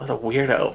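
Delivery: muttering under breath. In character, watching someone walk away: murmuring to oneself. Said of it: "I'll murmur to myself".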